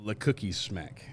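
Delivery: relaxed American pronunciation. Speaker trying to pronounce a name like not trying, casual American pronunciation. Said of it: "like I'm not trying... my American pronunciation".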